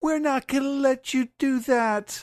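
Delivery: put-on very high, defiant children's shouting. Recounting a story where tied-up kids protest against Summers, acting out kids shouting. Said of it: "they're shouting".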